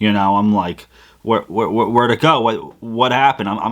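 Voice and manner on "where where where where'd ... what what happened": frantic, stumbling, panicked stammering. Retelling realizing the phone is missing: retelling own panic. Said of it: "I go into panic mode".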